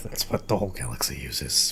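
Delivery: very quiet muttering under the breath. Voicing a character muttering as he walks away: muttered under his breath. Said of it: "and under his breath".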